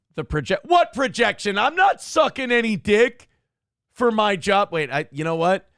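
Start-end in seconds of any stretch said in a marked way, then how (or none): 0.7-4.7 aggressive, overly defensive tone, higher and louder. Answering a chat message about projection: aggressive defensive denial. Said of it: "hear the defense in my voice?".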